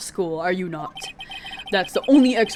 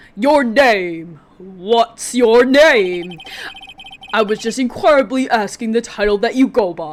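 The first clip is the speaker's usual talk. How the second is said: loud, grandiose, pompous put-on executive voice; 5 dB louder than usual. Voicing a character while playing a game, voice given to a character. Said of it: "that is the voice I am giving him".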